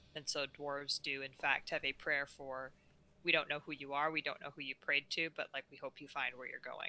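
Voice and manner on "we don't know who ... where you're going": muttered, much quieter and lower. Player voicing a dwarf's prayer for lost souls over unknown bodies, said under her breath. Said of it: "she's gonna kind of say that under her breath".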